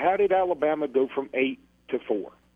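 ordinary delivery

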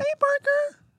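super high voice at the top of range. Teaching someone to copy how she did a voice, highest possible pitch. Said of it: "In the highest pitch possible".

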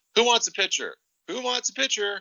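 very high, shrill, loud repeated shout. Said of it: "he starts yelling".

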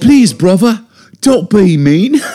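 very high, put-on little-girl London accent. Friends playing around with accents, in a little British girl London accent. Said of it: "The only way I can do a good London accent".

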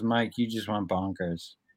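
very quiet, soft, hushed voice. Retelling a woman comforting him on the ground: imitating a soft voice. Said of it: "Soft voice".

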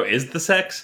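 bone-dry deadpan delivery. Imagining the other speaker's reply to a question: imitating a deadpan delivery. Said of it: "deadpan go".

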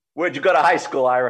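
put-on Brooklyn-accented speech. Retelling a phone call, the speaker voices the caller: Al Davis Brooklyn accent. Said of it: "Brooklyn accent".

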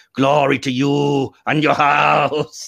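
broad, very slow overacted delivery, every word stretched. Imitating a Klingon leader's broad, bulging-eyed line reading: overacted broad Gowron voice. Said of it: "he's realized he can be broad".

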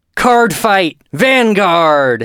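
loud, high-pitched shouted yell. Announcing the all-caps anime title for the live show, yelled. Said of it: "this is in all caps, so I'm going to yell it".

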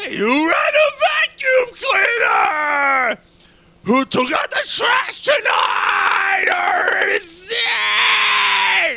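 shrill, booming, very loud, very slow, drawn-out scream. Imitating a man screaming at his kids when he comes home: imitating Crazy Eddie screaming. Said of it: "screaming at his fucking kids".

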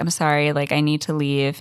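ordinary talk, nothing marked

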